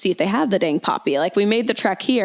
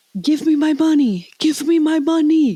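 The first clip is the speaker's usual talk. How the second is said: put-on strong, powerful, intense Jamaican accent, high; 7 semitones higher than usual. Acting out a man from a story, in an intense jamaican accent. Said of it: "like a Jamaican man, like they have like a powerful accent".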